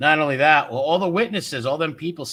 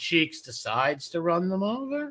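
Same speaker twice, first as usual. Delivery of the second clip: ordinary delivery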